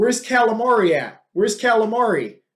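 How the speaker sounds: mock rowdy, mildly taunting, trash-talk heckle. Retelling how the opponent at weigh-ins started yelling: imitating someone yelling. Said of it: "He just starts yelling".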